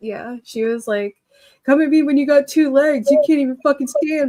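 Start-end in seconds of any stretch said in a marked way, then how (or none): 1.6-4.3 loud, high, screamed-out delivery. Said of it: "she just kept screaming that over and over".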